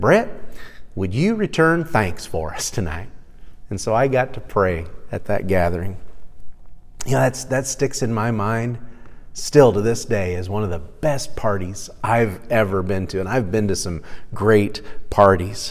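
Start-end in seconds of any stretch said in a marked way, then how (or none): 0.0-3.1 put-on genteel southern gentleman voice, Tennessee accent. Speaker retells what Joe said to him at dinner, in Joe's Tennessee accent. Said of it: "in his Tennessee accent".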